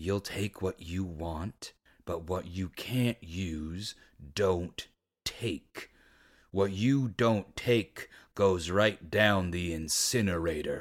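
dead, icy cold tone. Reading a novel aloud, Madden refuses the sister's plan: dead cold voice. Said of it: "His voice was dead cold".

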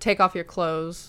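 put-on aggressive, forceful delivery. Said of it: "Like, aggressive".

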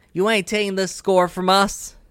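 mild thrown-back retort, pitched high. In a role-playing game, the game master voices Whitey yelling back at the players. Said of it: "Whitey yells back".

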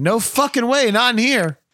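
mock, very high, really loud, shrill outburst. Reminding the listener what they once said, retelling saying it really loud. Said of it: "you said it really loud".

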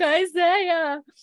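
mock, very high, tearful sobbing wail. Recapping a scene where she is brought inside, imitating Alicia crying. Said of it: "as Alicia's like crying".

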